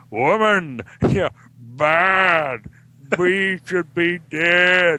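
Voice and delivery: classic movie-monster voice, badly drawn out. Speaker recalling a Bride of Frankenstein scene, doing the Frankenstein monster voice. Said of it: "the Frankenstein monster goes".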